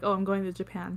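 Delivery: ordinary talk, nothing marked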